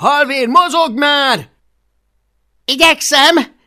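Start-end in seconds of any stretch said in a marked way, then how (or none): 2.7-3.4 offended shout, very high and very loud. Halvér, urged by Hablaty to hurry while climbing, shouts back offended. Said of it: "kiáltotta vissza Halvér sértődötten".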